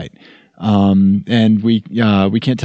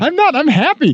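high-pitched, mock-delighted, fake cheerful voice. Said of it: "This, this is my happy sound".

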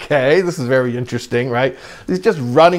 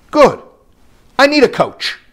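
grave, earnest, very serious, very high-pitched; 12 semitones higher, 4 dB louder than usual. Retelling a rabbi's reply to a visitor: imitating a very serious tone. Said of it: "in a very like serious tone".

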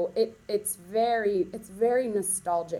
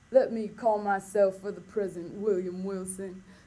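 put-on dramatic Southern accent. Acting out the show's Edgar Allan Poe opening William Wilson: dramatic Southern-accented Edgar Allan Poe. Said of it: "he has a southern accent".

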